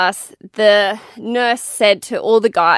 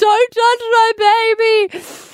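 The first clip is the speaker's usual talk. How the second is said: put-on very high, shrill acted sobbing scream, word baby drawn out; 13 semitones higher than usual. Recounting a moment with a four-day-old baby, retelling screaming while crying. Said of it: "I was screaming at her".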